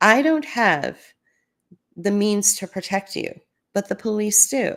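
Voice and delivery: kind, gentle, reassuring voice. Retelling what she told a man in a drug-induced fog: retelling her own kind voice. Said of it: "that was my kind voice".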